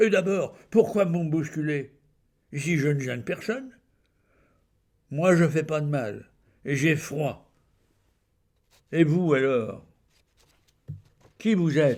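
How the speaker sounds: speaking loudly and aggressively. Narrator voices a tramp turning his questions on the woman helping him: loud, aggressive questioning. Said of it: "Un clochard, couché sur un carton et roulé dans une couverture grise et sale. Il était barbu et son aspect était peu engageant. / Il était barbu et son aspect était peu engageant. / Un clochard, / a p".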